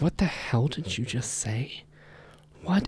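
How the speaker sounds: play-acted whisper, bewildered, baffled disbelief. Retelling a stranger's reaction to a strange question: imitating a baffled stranger. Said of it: "the guy looks at him like".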